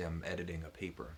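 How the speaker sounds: ordinary talk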